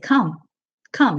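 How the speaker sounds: said firmly, with full conviction. Showing how to call horses with a repeated word: firm, convinced 'come, come'. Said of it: "I say it with conviction".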